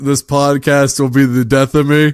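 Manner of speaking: plain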